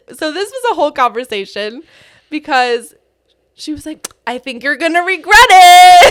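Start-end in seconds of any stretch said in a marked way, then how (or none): 4.2-6.1 very loud, high-pitched, sarcastic tone. Retelling what mom said about greeting guests: imitating mom sarcastically. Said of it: "Doing your sarcastic mom thing".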